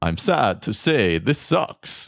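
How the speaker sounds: vampire voice with a Transylvanian accent. Reading out the final clue in a guessing game, in a Transylvania accent. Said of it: "So I will do it in my best Transylvania accent".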